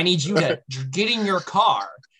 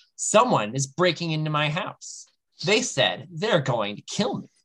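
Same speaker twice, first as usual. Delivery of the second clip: plain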